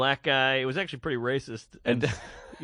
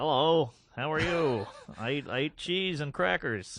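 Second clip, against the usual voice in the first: plain, bland voice.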